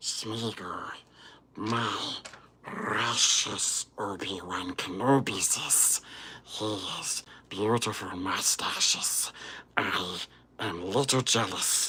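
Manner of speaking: very quiet, breathy, whispered voice. Doing character voices for viewers to vote on: Gollum voice. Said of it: "and Gollum".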